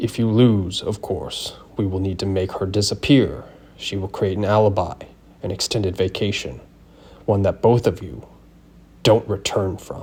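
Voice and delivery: poorly done fake deep, low voice. Reading a story where a man continues speaking in a crappy, fake deep voice. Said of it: "He continued in his crappy, fake deep voice".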